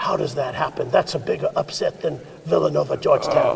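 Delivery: put-on Italian-accented voice. Recalling what a coach used to say back in college, in Coach Campanelli's Italian voice. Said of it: "in his Italian voice".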